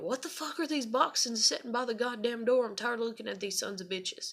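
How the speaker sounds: high-pitched screaming rant. Retelling how dad came in from work about boxes: imitating dad screaming. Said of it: "he just literally screamed at me".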